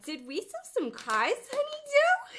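very loud, very high, slow, swooping sing-song drawl. Answering a dare to do a celebrity impression: Matilda's mom impression. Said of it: "I can do a good impersonation of Matilda's mom".

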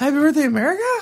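unsure, rising question tune on America. Teasing the other speaker that their cheer sounded like a question, mock questioning intonation. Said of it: "Like you almost said".

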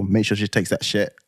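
ordinary talk

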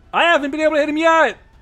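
loud high yelling. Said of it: "Tyler just yells".

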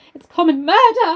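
high, trembling, quavering cry, carried away. Reading a novel aloud, the stranger's last cry: pitched high, trembling. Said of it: "The voice was pitched high, trembling on the".

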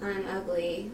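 ordinary delivery

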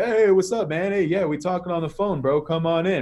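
casual dude-bro voice. Retelling how a guy named Richard greeted him at the door, talking like a dude. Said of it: "talking to me like a dude, bro".

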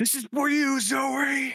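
very high, loud yelling out. Striking down a foe in character, crying a dedication: yelling out. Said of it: "I yell out".

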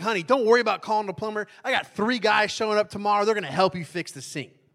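put-on thrilled, loud, excited, bursting delivery. Retelling how she announced three helpers were coming: imitating someone excited. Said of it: "so excited".

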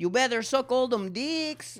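put-on Southern US accent. Riffing on how a dad would sound, in a southern accent. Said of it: "Now I'm still going southern".

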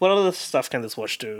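ordinary talk, nothing marked

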